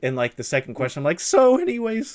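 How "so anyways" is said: put-on voice crack, higher and louder. Retelling an interview question where the voice went high school: imitating own voice cracking. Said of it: "my voice just completely went to, like, high school".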